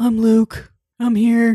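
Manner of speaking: slow, ridiculous, cheesy heroic narrator man voice. Imitating an audiobook narrator voicing a male character: imitating a ridiculous audiobook man voice. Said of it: "some of them just sounded so ridiculous".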